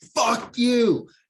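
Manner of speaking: full-on furious yell, shrill, very high, loud. Voicing a character hit in battle: full-on rage. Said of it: "in full-on rage, goes".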